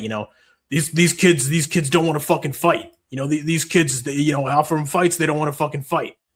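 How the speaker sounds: bad put-on fight promoter announcer voice.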